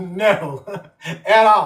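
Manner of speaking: words broken up by laughing while talking. Joking that the water was not made for swimming, laughing while talking. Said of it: "I'm sorry that I'm laughing".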